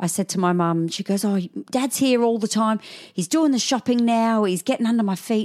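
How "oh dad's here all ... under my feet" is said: put-on Australian accent, pitched up. Quoting their mum on what she said to them, Australian accent. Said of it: "I don't know why I'm talking Aussie".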